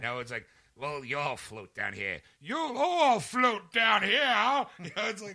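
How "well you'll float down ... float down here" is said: very loud, high, slow, drawn-out belted yell. Recalling a scene from a film he watched, doing a Tim Curry impression. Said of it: "becomes Tim Curry".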